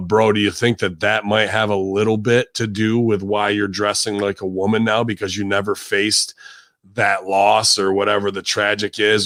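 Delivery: ordinary talk, nothing marked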